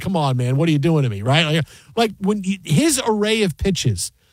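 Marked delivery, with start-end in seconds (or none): 0.0-1.2 mock-laughing, lower and faster. Describing a pitch, quoting the batter's reaction to the catcher: imitating a laughing batter. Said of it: "Soto looked at the catcher and just laughed".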